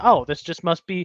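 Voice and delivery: ordinary talk, nothing marked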